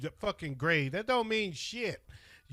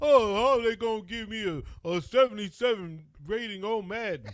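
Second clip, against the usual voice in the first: put-on slow, griping, complaining young player voice; 3 semitones higher, 4 dB louder than usual. Teasing another speaker about a c draft grade: imitating young football players complaining. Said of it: "you sound like these young ass football players now".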